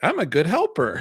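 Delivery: put-on small child's high little-kid voice. Retelling how a little helper carried one stick: imitating Big E. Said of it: "he's walking and he's like".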